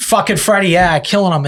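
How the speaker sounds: put-on Boston accent, chummy and casual. Imitating what a friend probably says, after talk of Boston accents: imitating Freddie in a Boston accent. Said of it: "he probably goes".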